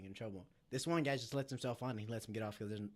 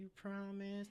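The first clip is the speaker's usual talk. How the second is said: very high, put-on little kid voice; 10 semitones higher, 4 dB quieter than usual. Acting out a little kid asking after a promise, childlike voice. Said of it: "That's exactly how this lady sounded".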